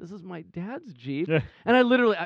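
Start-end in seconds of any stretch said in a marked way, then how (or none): 0.0-1.3 soft, sheepish, apologetic little voice. Retelling what she said to him, imitating a sheepish voice. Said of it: "she very sheepishly was like".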